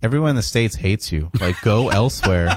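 ordinary delivery

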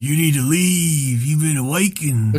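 put-on tough American voice. Talking like the Russian games he plays, to his friends: tough American voice. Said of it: "trying to sound like a tough American".

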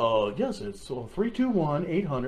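put-on radio announcer voice. Repeating a phone number, trying out a put-on radio announcer voice. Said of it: "Should I do my radio voice? ... That's not a good radio voice".

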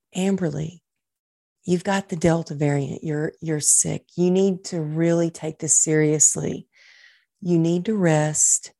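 mock kind, compassionate, gentle voice. Retelling what her doctor told her on the phone, imitating a kind, compassionate voice. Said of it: "in the kindest, most compassionate voice".

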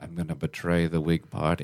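put-on whisper. Retelling what he whispered in the speaker's ear: retelling a whisper. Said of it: "He whispered in my ear".

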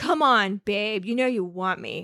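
acted cocky, self-assured voice. Paraphrasing how a book character courts a woman: imitating overconfident Brooke. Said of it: "paternalistic and overconfident in a way".

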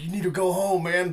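alarmed, frantic, panicked, freaked-out urging tone. Retelling how a man at the door reacted: imitating someone freaking out. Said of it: "he's just freaking out".

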